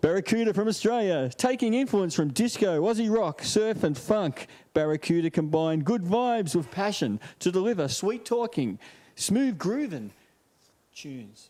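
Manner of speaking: put-on radio announcer delivery. Reading a band's bio aloud to listeners, in a radio announcer voice. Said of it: "I'll put on my radio voice".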